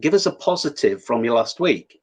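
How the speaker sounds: normal talking voice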